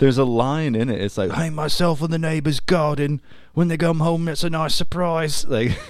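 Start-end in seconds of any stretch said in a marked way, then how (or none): 1.3-5.4 put-on British accent, pitched a touch higher. Quoting a line from a video to a co-host, in a British accent. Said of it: "that's a pretty good British accent".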